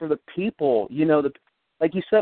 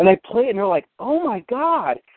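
ordinary delivery

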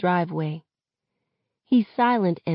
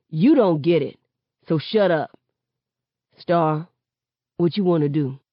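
plain reading voice

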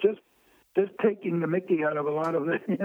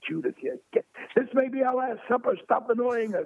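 high, raised group yell, all at once; 7 semitones higher than usual. Retelling how the last supper group yelled at him as the waiter; imitating people yelling. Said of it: "And they all yelled at me".

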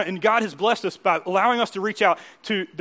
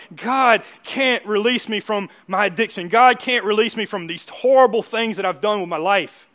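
mock tearful, crying, broken, shattered voice; 4 dB louder than usual. Describing people who arrive broken over their addiction: imitating someone crying. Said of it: "they come here broken and crying and going".

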